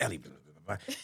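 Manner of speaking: barely audible, very low, deep hushed mutter. Retelling what Amar mutters back at his desk: imitating Amar muttering under his breath. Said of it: "under his breath, in the quietest words".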